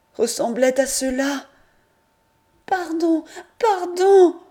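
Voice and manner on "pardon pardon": frantic, very high, loud, shrill terrified pleading. Louisette, mad with fear, begs: terrified begging. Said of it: "folle de peur aussi".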